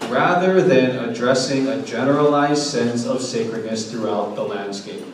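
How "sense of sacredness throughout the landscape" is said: ordinary talk, nothing marked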